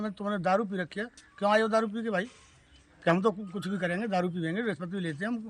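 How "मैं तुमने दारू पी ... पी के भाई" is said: usual speaking voice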